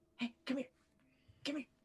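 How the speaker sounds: real quiet, quick, hushed coaxing call. Calling a little creature over without waking the big one: very quiet. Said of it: "real quiet so I don't wake up".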